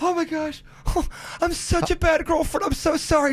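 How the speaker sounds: put-on voice, near tears, tearful. Retelling a girlfriend's apology in bed: imitating someone near tears. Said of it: "She almost started crying".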